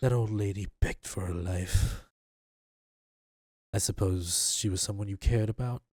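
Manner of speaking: hushed whisper. Game master voices a character whispering to a player's character after stabbing them: whispering. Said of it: "And he whispers to you".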